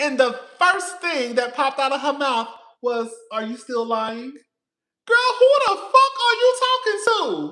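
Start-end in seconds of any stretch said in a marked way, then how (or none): 3.3-4.3 put-on haughty, snooty tone. Retelling what a woman back from jail first said: imitating a haughty question. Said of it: "came back with her nose in the air".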